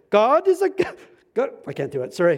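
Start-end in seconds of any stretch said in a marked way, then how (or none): 0.1-1.5 put-on German accent, very high and loud. Recalling a man they lived with, imitating his german accent. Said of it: "saying in his German accent".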